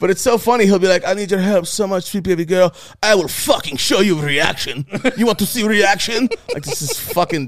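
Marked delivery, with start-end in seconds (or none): 1.1-6.3 put-on thick, laid-on, silly heavy Israeli accent. Quoting what a man says, in a stupid heavy Israeli accent. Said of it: "stupid heavy Israeli accent".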